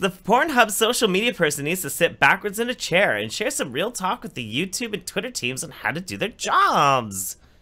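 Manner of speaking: high, sing-song, silly reading voice.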